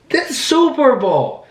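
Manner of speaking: very high, drawn-out yell.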